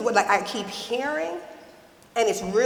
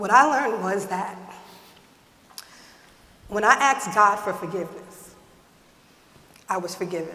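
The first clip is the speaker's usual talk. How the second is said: choked-up emotional voice; 2 semitones lower than usual. Talking about asking God for forgiveness, getting emotional. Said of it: "and I'm getting emotional, excuse me".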